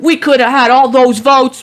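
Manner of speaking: very loud, high, screaming, put-on old Brooklyn accent. Retelling a man screaming into the camera at a watch party, in an old Brooklyn accent. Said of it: "In the in the old like Brooklyn accent".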